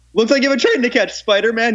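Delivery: high, villainous shout. Reminding a friend of a basement moment, retelling their yelled Doc Ock impression. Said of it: "and you went".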